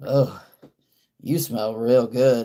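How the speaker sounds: mock sultry, aroused delivery. Retelling a doctor stopping mid-report to give a compliment: imitating a turned-on voice. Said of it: "the way she said it was, like, she was, like, turned on".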